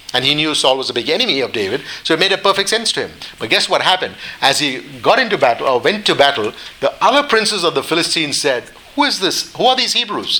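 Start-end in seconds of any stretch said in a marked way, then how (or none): 9.0-10.4 heavily sarcastic delivery, pitched up. Retelling how the Philistine princes questioned David's men, mock-sarcastic. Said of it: "Very sarcastically".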